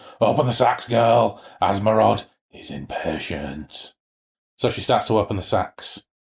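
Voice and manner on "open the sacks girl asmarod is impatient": slow, drawn-out voice of eight vibrant voices together. A narrator reading Elmec calling to a girl, as eight vibrant voices at once. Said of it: "in what sounded like eight vibrant voices speaking at once".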